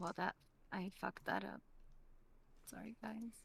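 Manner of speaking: sorry, deflated, disappointed and let-down tone. Apologizing to the group after a bad roll, disappointed. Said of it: "She sounded so disappointed".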